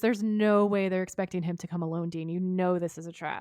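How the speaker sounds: plain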